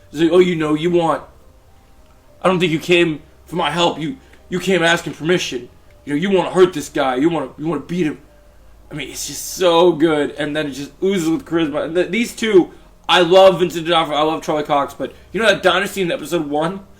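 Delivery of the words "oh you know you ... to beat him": put-on gruff antihero voice. Retelling a show's scene, quoting Frank: Jon Bernthal voice as Frank. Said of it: "my John Bernthal voice takes a lot more energy".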